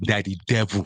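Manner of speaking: put-on Nigerian accent. Quoting what women would say about african men, in a nigerian accent. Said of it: "I'm going to say my Nigerian accent".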